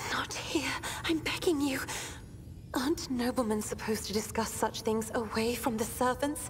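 very hushed, soft, high near-whisper. Voicing Cassia pleading to talk away from servants: almost whisper. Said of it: "Cassia says in an almost whisper".

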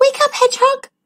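very high, scared, frightened shout. A narrator reads the spider waking her sleeping friend the hedgehog: frightened shout. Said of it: "shouted the spider in a frightened voice".

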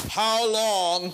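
big booming voice. Retelling what he said with his big booming voice. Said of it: "With his big booming voice, he said, I don't have a big booming voice, so I can't do it. How long? There, I can just amplify it".

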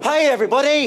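rousing, high, very loud shout. Performer on stage teaching the audience a greeting, shouting a greeting. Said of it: "I'll shout".

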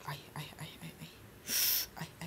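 soft, unvoiced, tense whisper.

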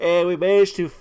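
loud, high speech with a big yawn mid-sentence. Recording a late video just after getting home from work, yawning. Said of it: "sorry for yawning".

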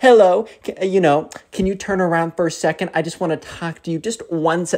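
slow, play-acted patronizing, condescending baby talk voice. Retelling how a woman addressed two boys, imitating a condescending babying voice. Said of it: "kind of like a babying voice where they try and baby you".

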